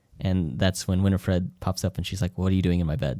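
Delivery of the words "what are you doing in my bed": put-on casual, nonchalant voice. Retelling a film scene where Winifred finds a stranger in her bed: imitating Winifred's nonchalant tone. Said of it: "Nonchalant about it".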